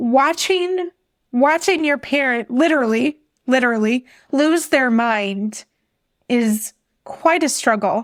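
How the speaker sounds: emotional, choked-up delivery with catching voice. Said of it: "I'm kind of getting choked up".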